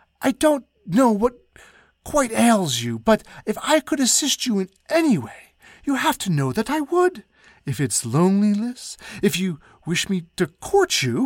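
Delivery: high, rushed, words spilling out all at once. The Duke, addressing Her Majesty, finally spills out his words in a rush. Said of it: "finally spilling out words in a rush".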